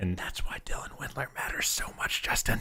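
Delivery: soft, unvoiced whisper.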